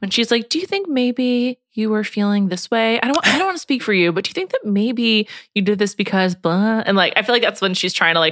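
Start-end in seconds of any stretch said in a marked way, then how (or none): 0.5-6.8 put-on gentle, soft, coaxing baby-talk voice. Imitating someone calming a child during a tantrum: imitating Vanessa's therapist voice. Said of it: "her therapist voice, which is, like, baby voice".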